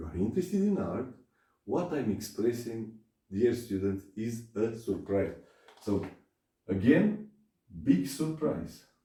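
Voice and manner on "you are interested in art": rising pitch on art, question-like tune. Teacher showing how a statement becomes a surprised question: rising question intonation at end. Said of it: "the intonation is one of a question".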